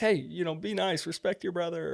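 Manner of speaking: high-pitched hollering. Retelling a video where the mom hollers at the kids: imitating someone hollering. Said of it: "she kinda hollers at 'em for that".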